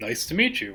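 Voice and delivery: calm, mild, easygoing and unbothered voice. Doing an impression of Todd greeting someone: calm Todd impression. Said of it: "My impression of Todd is".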